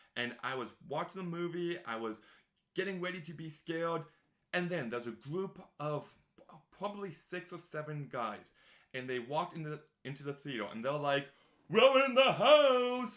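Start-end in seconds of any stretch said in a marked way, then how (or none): 11.7-13.2 very slow, very loud, very high drawn-out shout. Retelling moviegoers entering a theater late: imitating guys shouting. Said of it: "they were shouting across the theater".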